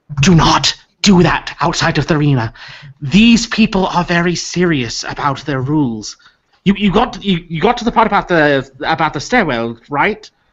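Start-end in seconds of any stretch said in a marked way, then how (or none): 0.2-6.2 hushed, confidential tone. Voicing a character who looks around before warning the players, in a hushed tone. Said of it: "she says in hushed tone".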